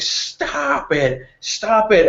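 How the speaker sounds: very high, drawn-out, slow, frustrated screaming. Narrating a scene, voicing a frustrated woman screaming at a man. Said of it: "she starts screaming at him and just screaming".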